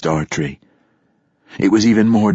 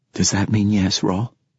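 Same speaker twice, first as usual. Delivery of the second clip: usual speaking voice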